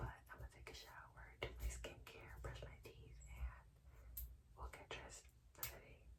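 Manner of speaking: whispered voice. Listing morning plans while a brother sleeps next door: whispering. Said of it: "I will be whispering because my brother is asleep".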